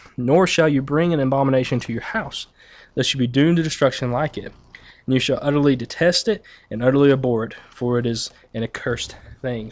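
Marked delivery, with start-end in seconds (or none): none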